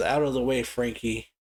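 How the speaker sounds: ordinary delivery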